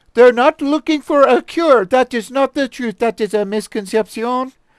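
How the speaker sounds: bad fake French accent. Reading a quote from a french woman aloud: horrible french accent. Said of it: "my horrible, horrible, horrible, horrible, the worst French accent".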